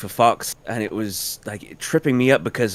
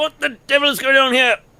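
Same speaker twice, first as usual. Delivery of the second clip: put-on very high, old-fashioned officer voice. Trying out a line that sounds like someone: John Cleese voice. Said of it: "that sounds like John Cleese".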